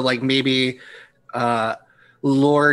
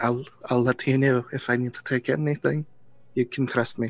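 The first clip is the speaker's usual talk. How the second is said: close, secret, hushed half-whisper; 4 dB quieter than usual. Voicing a character who leans in to a player: half-whispering in character. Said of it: "basically just kind of whispers in your ear".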